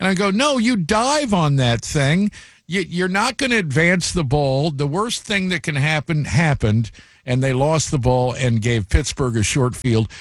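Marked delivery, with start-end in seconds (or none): 0.3-6.9 calling out loudly, pitched up. Retelling a fumbled punt on tv: retelling yelling at the tv. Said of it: "I'm yelling at the T V".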